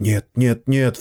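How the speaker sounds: frantic, panicked hiss. Narrator reads Charlie pulling his wife back from the policeman, a panicked hiss. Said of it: "в панике прошипел он".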